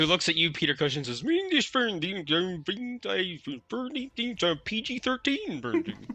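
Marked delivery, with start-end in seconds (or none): 1.2-6.1 put-on, high Swedish-sounding nonsense babble. Voicing a film director who walks over to a player: Swedish Chef voice. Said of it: "over walks the Swedish chef".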